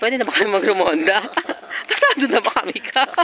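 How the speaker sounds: high-pitched, laughing, playful delivery.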